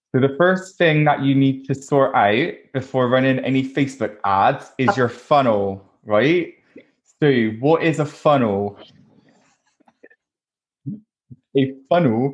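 fake Bristolian accent. Kick off the podcast as normal with a straight face, being someone different, in a put-on Bristolian accent. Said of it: "shall I do the whole podcast in the Bristolian accent?".

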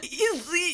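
mock choked, strained voice. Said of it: "She was literally talking like that".

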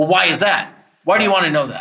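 pushy, hard-pressing, aggressive and confrontational delivery. Acting out questioning a timid person too hard: mock-aggressive questioning. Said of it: "If you go too aggressive and you're like".

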